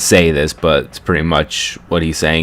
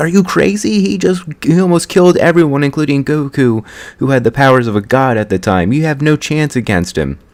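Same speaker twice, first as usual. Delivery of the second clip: high-pitched mock yell. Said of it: "starts yelling at him".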